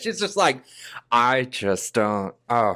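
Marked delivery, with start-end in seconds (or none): 1.1-2.8 put-on Northeastern accent, lower pitch. Imitating an actress's way of speaking: Jennifer Jason Leigh impression. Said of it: "do an impersonation of her?".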